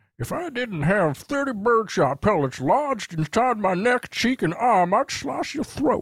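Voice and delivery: put-on very high-pitched Texan accent. A man hit with birdshot snaps at the man who shot him, as a Foghorn Leghorn-type Texas attorney. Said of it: "foghorn leghorn type Texas attorney".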